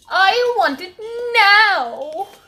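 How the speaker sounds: shrill, loud, demanding bratty whine, drawn out. Repeating a demand just heard, in a Veruca impression. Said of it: "reminds me of that Veruca person".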